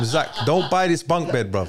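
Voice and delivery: ordinary talk, nothing marked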